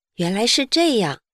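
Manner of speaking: ordinary delivery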